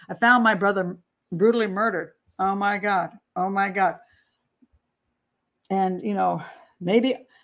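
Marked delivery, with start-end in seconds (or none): none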